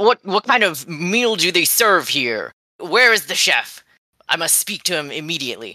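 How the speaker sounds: furious, angry, fuming, pitched high. A storyteller voices a man walking toward the bartender, angrily fuming. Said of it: "he's still angrily fuming".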